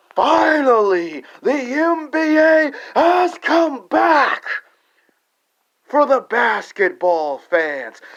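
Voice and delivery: lively passion, very high pitch, very drawn out. Redoing a line after criticism for lacking passion, now with lots of passion. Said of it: "So let me say it with some passion".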